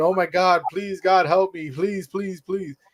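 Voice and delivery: put-on anxious, nervous, pleading tone. Retelling how a fighter walked into the ring, imitating nervous praying. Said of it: "looking all nervous".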